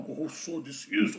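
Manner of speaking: thick, grave put-on deep voice, very hushed. Imitating guys he used to hear talking, in a put-on deep voice. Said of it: "Eu ouvia sempre os caras falando com voz grossa".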